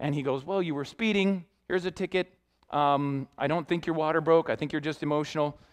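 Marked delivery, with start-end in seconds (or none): none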